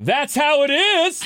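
mock top-of-lungs holler, very high and slow. Retelling how a moviegoer shouted at the screen: imitating someone yelling. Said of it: "yelled at the top of his lungs at the screen".

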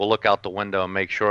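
plain

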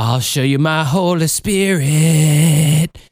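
put-on breathy whisper. Mocking breathy praise singers with a line of his own: mock breathy creepy whisper. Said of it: "they're whispering right in your ear".

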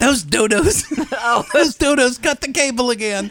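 put-on elderly woman voice. Retelling a mother's complaint about workers cutting the cable: imitating an elderly mother. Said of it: "My little ninety-year-old mom just waving her hand".

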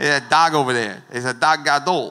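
loud Boston local accent. Explaining a Hebrew word during a sermon, in a Boston accent. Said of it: "like you're from Boston talking about a dog".

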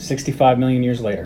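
normal talking voice

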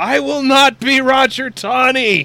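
very high, loud, slow anguished shout.

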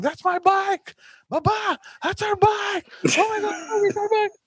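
very high, stretched-out, drawn-out shouting. Retelling how Emma spotted their stolen bike in the street, retelling Emma's yell. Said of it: "she starts yelling".

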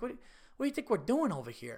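baffled, put-on Italian accent. Retelling a comedy club owner's reply to the speaker: imitating an Italian accent. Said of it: "it was so Italian and funny".

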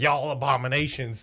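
put-on hateful, contemptuous voice. Imitating a purebred person hating on everyone: imitating a hateful person. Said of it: "just hating on everyone, be like".

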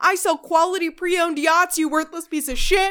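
shrill, loud, outraged screaming. Retelling a book character screaming at a cop, retelling a character's scream. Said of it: "and he screams".

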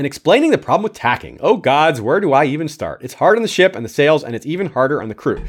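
ordinary talk

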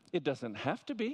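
play-acted, sweetly, maddeningly polite and irritating. Retelling his wife's reply while he searched for a screw: imitating a politely irritating tone. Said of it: "in the most politely irritating way you can possibly imagine".

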